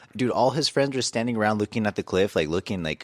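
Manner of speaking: usual speaking voice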